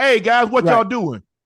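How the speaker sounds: shrill, high-pitched, loud yell. Retelling how someone called out to the guys: imitating someone yelling. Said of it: "He yells like".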